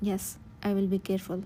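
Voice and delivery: ordinary talk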